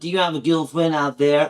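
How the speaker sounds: clumsy, bad put-on Southern American accent. Imitating a woman heard in a recording: southern accent. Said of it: "the southern accent".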